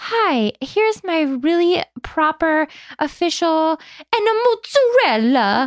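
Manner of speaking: slow, put-on Italian accent, lingering on words. Mimicking an annoying woman on a few words, Italian accent. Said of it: "if you're going to do the Italian accent".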